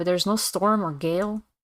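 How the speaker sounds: ordinary talk, nothing marked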